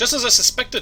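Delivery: bad Scottish accent. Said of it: "my Scottish accent needs some work".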